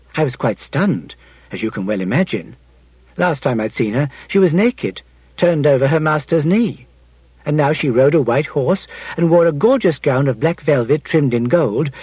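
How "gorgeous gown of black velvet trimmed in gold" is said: plain reading voice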